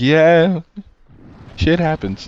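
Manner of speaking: put-on acted chill, unbothered stoner voice with slow, stoned drawl. Imitating a game character who seems always high: imitating a stoned guy. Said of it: "He's just high all the time".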